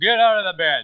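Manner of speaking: great big voice. Speaker quotes a radio announcer from his story, in a great big voice. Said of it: "In a great big voice".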